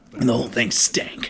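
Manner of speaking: hushed, breathy, whispered narrator voice. Repeating the game narrator's line after hearing it: imitating the game narrator's voice. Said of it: "He does say it like that".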